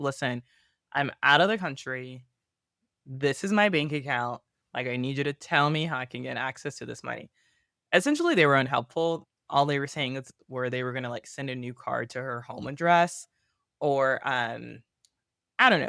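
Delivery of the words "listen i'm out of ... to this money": usual speaking voice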